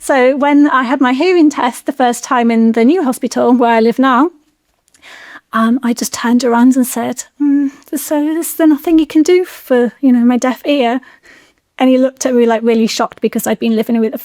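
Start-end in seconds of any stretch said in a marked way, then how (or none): 7.4-11.0 innocent-sounding voice. Retelling a question asked at a hearing test: imitating own innocent tone. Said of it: "I played a little bit, like, innocent".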